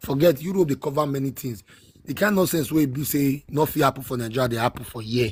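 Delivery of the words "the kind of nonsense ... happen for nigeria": ordinary delivery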